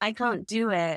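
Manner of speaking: ordinary talk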